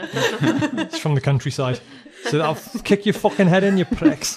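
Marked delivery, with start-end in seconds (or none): 2.2-4.4 heavy put-on Liverpool Scouse accent, very thick. Voicing a rude woman insulting a group, very scouse accent. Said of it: "And very scouse".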